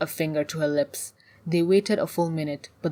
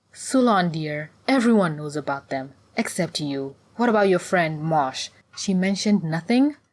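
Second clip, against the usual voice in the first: plain reading voice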